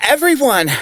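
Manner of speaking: sharp high-pitched shout. Calling out to the others to get attention: shouting. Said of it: "there's no need to shout".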